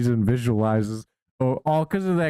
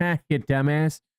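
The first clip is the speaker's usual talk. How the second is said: put-on sassy AI girl voice; 3 semitones higher than usual. Imitating what the AI would say back: sassy Grok girl voice. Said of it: "you need the sassy grok girl voice".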